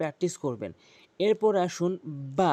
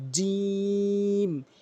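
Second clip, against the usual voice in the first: jim pulled long and lingering, vowel held; 2 semitones higher than usual. Letter pronunciation lesson, stretching the letter name: drawn-out jim. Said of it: "জিম এভাবে টেনে উচ্চারণ করবেন".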